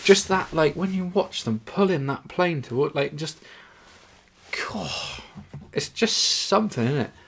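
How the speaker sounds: bubbling enthusiasm. Speaker catches himself getting worked up mid-story: excited. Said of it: "I'm getting excited just thinking about it now".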